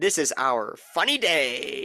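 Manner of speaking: slow, eerie, unsettling, creepy delivery. Retelling what a man walking past in the lobby said, imitating a creepy delivery. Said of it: "very creepily".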